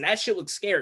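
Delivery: normal talking voice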